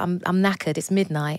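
ordinary delivery

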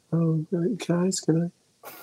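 put-on quiet timid voice. Suggesting someone to impersonate, imitating Emma's quiet voice. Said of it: "Emma's nice and quiet. She just is always like".

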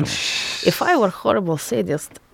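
put-on Russian accent, joking. Urging another speaker to try it, showing how in a mock russian accent. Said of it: "Do it in a Russian accent".

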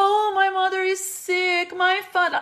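high, slow, mock pleading sob voice.

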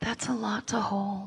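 acted, very quiet, earnest, sincere sad tone. Retelling a therapist's sincere reply to them, imitating her sad tone. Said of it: "And she made a sad face and she goes".

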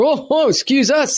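suddenly bro-ish, apologetic tone, high and slow. Retelling how strangers on a plane apologized: imitating a bro-y apology. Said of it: "all bro-y with me".

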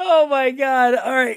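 talking through laughter. Opening the show after a recording mishap, laughing while talking. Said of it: "Why I'm laughing right now, folks, I'm sorry".

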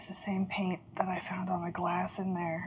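barely audible, very hushed, conspiratorial whisper. Leaning over to tell another character about matching paint, whispering in character. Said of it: "I lean over and I whisper to you".

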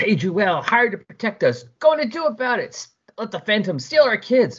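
very high, shrill, furious hollering. Reading a story where the natives surround the Legion members, yelling. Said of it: "they're yelling at them".

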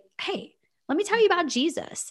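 high, fast, chirpy, cheery put-on voice.

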